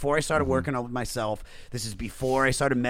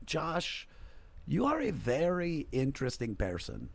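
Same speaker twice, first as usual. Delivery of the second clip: put-on spoken with a Serbian accent; 4 semitones higher, 6 dB quieter than usual. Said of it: "she's got like a thick Serbian accent".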